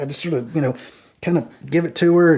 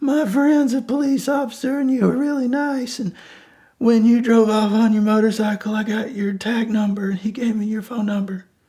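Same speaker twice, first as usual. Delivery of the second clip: put-on drunk, tearful crying, much higher; 6 semitones higher than usual. Speaker retelling what a woman said to him: imitating a drunk woman crying. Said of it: "she's drunk and she's still kind of crying".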